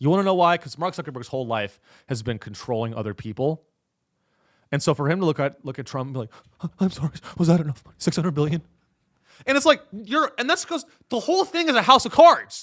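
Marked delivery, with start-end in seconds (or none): 6.8-8.6 cowering, groveling, begging tone. Picturing Mark Zuckerberg asking Trump about the money: imitating Mark Zuckerberg groveling. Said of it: "grovel at the knees of another man".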